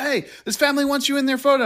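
mock hollered yell, very high. Retelling how a man started yelling at the speaker, imitating his yell. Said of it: "he starts yelling at me like".

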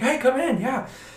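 play-acted, high, super excited, eager, delighted. Retelling how a man greeted the speaker at his office, imitating a super excited greeting. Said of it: "he was super excited to see me".

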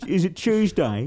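high put-on British accent. Voicing the cat greeting its owner: put-on british accent. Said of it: "It meows with a British accent".

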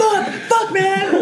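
high, panicked screaming.

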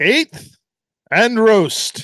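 loud game show announcer. Reading out the sponsor's name: game show announcer voice. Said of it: "my inner game show announcer".

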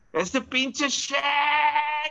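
acted full-lung yell, very high, shack drawn out. Early morning at Lowe's, imitating Robert shouting at the top of his lungs. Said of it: "at the top of his lungs, he goes".

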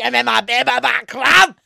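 bad, booming, rough character voice, bellowed slowly. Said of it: "it wasn't great".

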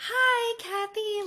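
put-on very high, excited, gushing voice. Retelling how a cast member greeted a guest, imitating an excited hello. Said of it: "so excited".

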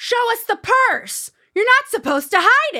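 shrill shouting pitched way up. On a red carpet, quoting a woman photographer yelling at the speaker: retelling a yell. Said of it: "And she's like yelling at me".

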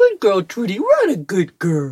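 loud, sing-song special voice. Asked for an example, show how you talk to your dog Trudy, in your special dog voice. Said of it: "Give me an example of this special dog voice".

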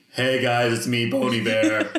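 slow, deliberate chest-voice delivery. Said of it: "his speaking voice is a very deep chest voice".

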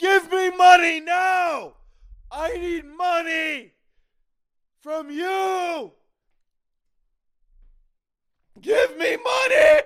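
very high, stretched shout broken by hiccups. The speaker yells demands at the audience while yelling with hiccups. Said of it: "Their hiccups are back".

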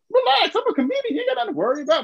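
high, amused, reassuring tone.

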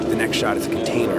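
plain

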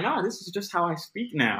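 high-pitched, defensive, insistent tone.

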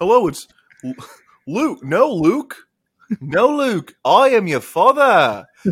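increasingly strong Australian accent. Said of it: "I sound like I'm a Wiggle".

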